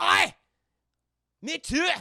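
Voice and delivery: put-on very loud, high Scottish accent. Retelling a meeting on a bridge, voicing the Scotsman: Scotsman voice. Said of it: "this Scotsman".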